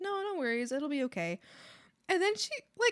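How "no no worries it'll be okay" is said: calm, even tone. Speaker retells answering their upset mom, retelling their own calm tone. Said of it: "I was speaking normally in a very calm tone".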